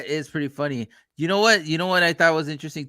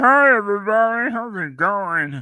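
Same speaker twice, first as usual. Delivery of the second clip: slow, drawn-out, teasing, mocking voice; 6 semitones higher, 4 dB louder than usual. Teasing the other speaker by imitating how he sounds. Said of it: "I don't sound like that".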